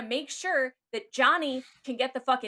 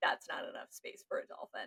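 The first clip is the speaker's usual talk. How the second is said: softly whispered. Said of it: "SeaWorld would be like".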